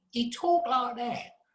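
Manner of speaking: put-on very high-pitched voice with Southeast London accent. Describing an old radio interview recording, imitate a high-pitched H. G. Wells with a Southeast London accent. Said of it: "Very, very high-pitched voice and a Southeast London accent".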